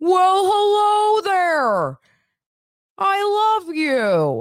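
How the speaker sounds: beaming voice, high and loud. Explaining who Gary sounds like, doing a Barney the Dinosaur impression. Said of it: "And Barney's like".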